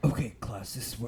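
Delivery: put-on, deepened, teacherly deep voice. Acting out addressing a class in a daydream: put-on deep voice. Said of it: "my voice gets deep for some reason".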